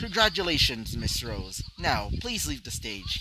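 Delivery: ordinary delivery, nothing marked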